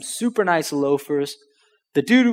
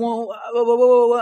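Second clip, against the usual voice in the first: high, halting, flustered, nervous stutter; 8 semitones higher than usual. Retelling calling a seller back about an offer: imitating own nervous stutter. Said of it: "I'm stuttering".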